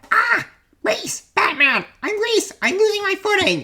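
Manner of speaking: very high-pitched sidekick voice. Story narrator voices the sidekick slipping on a spot of grease, Robin voice. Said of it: "Then, a bad break as [name]'s foot hits a spot of grease. / Then, a bad break as [name]'s foot hits a spot of grease".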